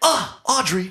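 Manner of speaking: comic voice pitched way up. Quoting a line from Liar Liar: Jim Carrey Liar Liar quote. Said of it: "That's Liar Liar".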